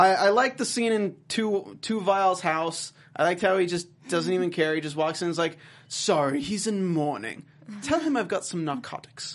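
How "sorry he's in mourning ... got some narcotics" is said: terrible, bad fake put-on British accent. Retelling a character's line from a show scene, in a bad British accent. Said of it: "I like the accent you're doing over there".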